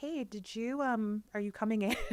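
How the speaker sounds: calm, soft voice. Retelling a fellow reporter's call after oversleeping, imitating a very calm voice. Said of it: "it was like the calmest voice".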